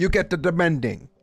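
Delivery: strong imitated Italian accent. After stumbling over a word, saying it again in a very Italian accent. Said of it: "I went very Italian there".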